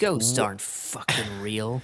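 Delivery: put-on snarky child voice. Quoting what the snarky kid says in the epilogue: imitating a snarky kid. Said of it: "I love how snarky that kid is".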